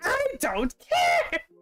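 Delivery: yelling in a very high voice, acted out. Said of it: "uncle was just yelling at her".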